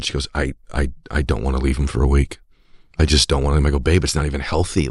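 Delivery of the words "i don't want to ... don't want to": mock-tearful crying voice. Quoting his wife as they drive away for the week, imitating crying. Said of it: "My wife would not stop crying".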